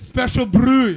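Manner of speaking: slow, drawn-out, bad Scottish accent.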